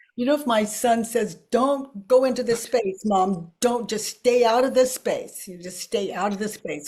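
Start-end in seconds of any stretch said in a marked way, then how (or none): 1.5-6.9 mimicked snippy voice with an attitude. Retelling what the son says to his mom: imitating son with an attitude. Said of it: "with an attitude".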